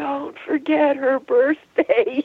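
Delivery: mock hoarse, distant whisper. Retelling a message heard on an answering machine: imitating a hoarse whispery distant voice. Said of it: "very sort of hoarse, whispery, distant voice saying".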